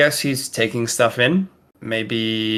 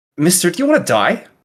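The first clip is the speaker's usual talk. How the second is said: loud, high, scornful barked retort; 8 semitones higher, 5 dB louder than usual. Narrating a story where a girl barks back at an elderly man, scornful barking. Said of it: "with a voice of scorn, kind of barks back".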